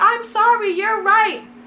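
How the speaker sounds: panicked, pleading, high-pitched voice.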